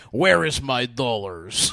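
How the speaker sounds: loud, clumsy, bad fake American accent. A speaker retells their cousin's impression of an American: bad American accent. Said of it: "That was his American".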